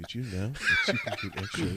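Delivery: mocking little put-on voice.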